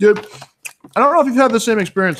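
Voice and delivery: talking with mouth full. Asking the other person about their training experience, talking while eating. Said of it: "sorry for eating".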